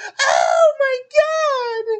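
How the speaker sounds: scared, shrill, swooping, very loud full-force scream. Retelling a friend's reaction to a scary movie scene: imitating a scream at top of lungs. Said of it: "just screamed at the top of his lungs".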